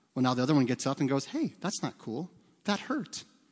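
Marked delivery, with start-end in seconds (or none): 1.3-3.3 very chill, calm, soft, level, barely any emotion. Acting out a child who has just been shoved to the ground, mock-calm, little emotion. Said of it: "they talk like this when they're children. It's very calm. Not much emotion".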